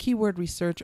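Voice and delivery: ordinary talk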